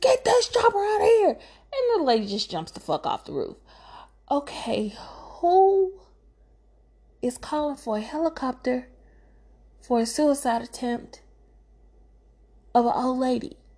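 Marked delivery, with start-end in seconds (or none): 0.0-1.3 mock, very high, frantic, shrill, rushed scream. Recounting a rooftop rescue, act out the officer screaming at the helicopter: retelling a scream. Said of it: "he screams".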